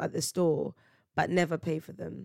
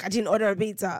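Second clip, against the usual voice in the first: acted-out irritated, indignant, clearly put-out man. Retelling telling a man his pizza was outside, imitating an angry man. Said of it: "He was so mad".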